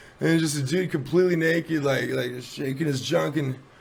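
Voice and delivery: ordinary talk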